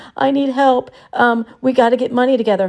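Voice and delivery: mock crying with pleading tone. Retelling how others claimed Kayleigh begged for money: imitating someone crying. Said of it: "crying, saying".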